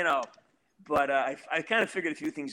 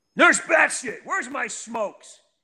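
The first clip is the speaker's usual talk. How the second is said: amped-up, worked-up voice, much higher pitch; 9 semitones higher, 7 dB louder than usual. A speaker shows how he talks when he gets worked up: amped-up voice. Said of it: "When it's amped up".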